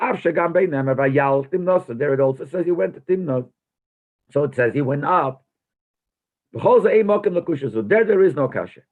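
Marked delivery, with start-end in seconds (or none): none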